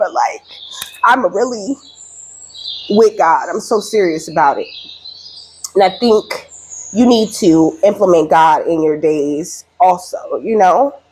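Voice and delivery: tearful, emotional speech, close to tears. Speaker getting emotional while talking to a listener, tearful. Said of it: "That just made me cry".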